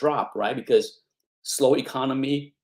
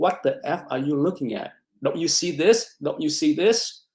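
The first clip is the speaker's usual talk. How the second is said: put-on, angry berating scream; 2 semitones higher than usual. Retelling how a trading teacher reacted: imitating a teacher screaming. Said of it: "he would be screaming at me like".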